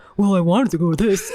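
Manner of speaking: ridiculous, weird-sounding mocking voice. Showing how spouses mock each other in arguments: mocking imitation of Joe. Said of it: "really weird sounding voices when we throw the mocking".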